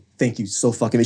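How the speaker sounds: ordinary talk, nothing marked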